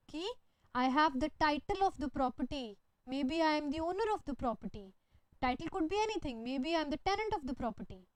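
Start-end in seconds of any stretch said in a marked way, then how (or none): none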